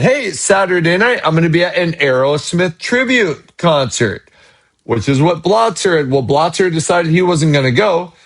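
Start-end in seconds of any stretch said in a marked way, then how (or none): none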